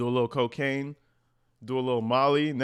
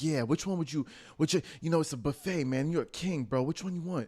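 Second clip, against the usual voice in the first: higher-pitched, smooth, suave voice. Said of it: "he's all suave".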